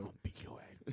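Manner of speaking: soft, unvoiced, menacing whisper.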